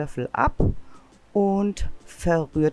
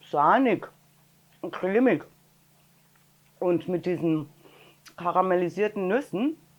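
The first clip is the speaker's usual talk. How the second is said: speaking with a full mouth. Speaker tastes homemade walnut ice cream, talking with mouth full. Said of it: "dass ich hier mit vollem Mund spreche".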